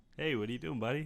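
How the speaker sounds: plain, straight-up put-on American accent. Asked to try a plain American accent, answering in a straight-up American accent. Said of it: "Can you do like just a straight up like".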